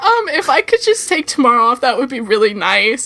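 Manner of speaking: choked-up, halting voice catching in the throat. Retelling own words to a manager while choking up: retelling choked-up voice. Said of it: "I'm, like, choking up".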